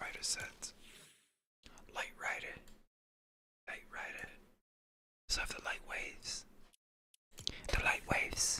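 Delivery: quiet whispered reading. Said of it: "I'm just whispering in my head".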